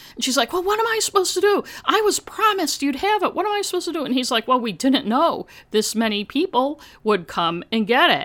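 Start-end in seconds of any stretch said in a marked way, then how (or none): 0.6-4.1 mock screaming, very high pitch. Retelling how a woman screamed at the pharmacist, imitating a woman screaming. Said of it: "who was like screaming at the pharmacist".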